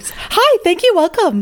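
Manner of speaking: pushy, aggressive, very high customer-service voice. Showing the voice she uses at work, aggressive customer service voice. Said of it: "I have a really aggressive customer service voice".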